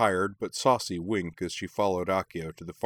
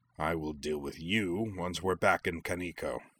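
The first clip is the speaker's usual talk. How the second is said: words growled out, growling; 4 dB quieter than usual. Leaving the gallery, Anubishu speaks to Shuten while others overhear: growling. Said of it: "growling to Shuten".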